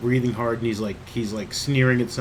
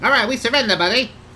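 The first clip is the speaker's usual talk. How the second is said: very high, loud goblin character voice; 12 semitones higher, 7 dB louder than usual. Game master voices surrendering goblins who drop their clubs: goblin voice. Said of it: "wrong wrong the, the goblin voice".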